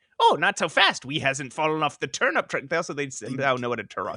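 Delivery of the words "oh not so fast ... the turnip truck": cheeky, little, impish creature voice. Describing how the creatures in a comic talk: impish creature voice. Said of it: "it's like an impish kind of like".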